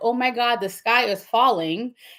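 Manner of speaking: plain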